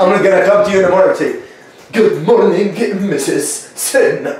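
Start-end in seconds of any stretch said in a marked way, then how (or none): 1.9-4.2 slow, drawled mock American accent. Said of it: "That's how you usually talk".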